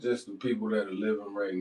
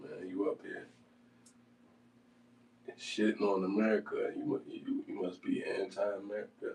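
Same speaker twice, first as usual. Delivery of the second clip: ordinary talk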